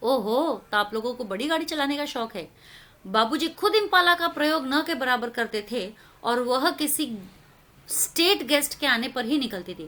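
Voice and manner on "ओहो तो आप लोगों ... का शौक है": snide, taunting tone dripping with sarcasm. Retelling how someone taunted them about driving a big car, mock taunting tone. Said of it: "तो जैसे देखो ताना मारते हुए".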